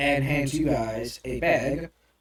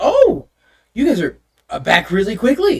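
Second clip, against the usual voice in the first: very loud, animated, swooping receptionist voice; 8 semitones higher, 10 dB louder than usual. Game master as the receptionist, looking up as the players return: receptionist character voice. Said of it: "the receptionist looks up and goes, / okay, and so she looks at the rune, / the receptionist looks up and goes".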